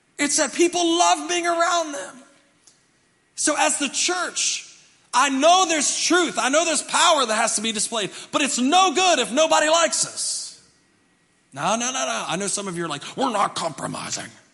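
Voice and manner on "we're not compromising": mock hard-edged, harsh, nasty tone. Imitating some churchgoers who refuse to compromise: imitating a harsh, nasty tone. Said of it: "You don't have to say it that way".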